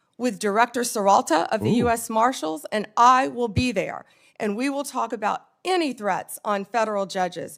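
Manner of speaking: forceful shouting. At a hearing, answering a questioner's request about threats, yelling. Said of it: "why are you yelling?".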